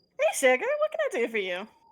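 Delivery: warm-hearted, homey, motherly voice. A woman at the bar leans over to greet the approaching party; homey motherly voice. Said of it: "She has a very homey voice, almost very motherly".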